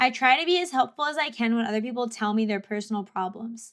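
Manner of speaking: usual speaking voice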